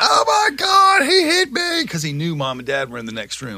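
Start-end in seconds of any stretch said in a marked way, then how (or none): 0.0-1.9 mock shrill, very high, drawn-out wailing scream. Retelling a childhood fight, imitating the little brother screaming. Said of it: "the brother starts screaming".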